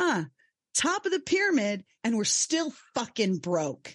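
mock angry, fed-up griping with swooping pitch. Retelling what a husband said on coming home: imitating an angry husband. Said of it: "he's pissed".

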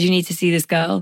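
normal talking voice

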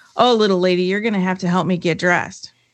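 put-on loud speaking. Retelling what a man said to a woman in a packed store, retelling a loud remark. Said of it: "he says pretty loudly".

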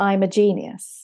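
normal talking voice

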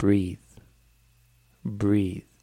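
word said slowly and drawn out. Guiding a listener through a word exercise: saying the word slowly. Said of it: "you say it slowly".

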